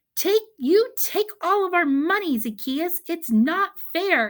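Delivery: very high, loud, eager, excited exclamation. Reading a child's line after Mom asks for more excitement: excited exclamation. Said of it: "Say it with a more a little more excitement".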